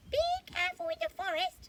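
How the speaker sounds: tiny, squeaky little bird voice, very high-pitched. Reading a story aloud, voicing a little robin's warning: little robin voice. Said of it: "My robin voice".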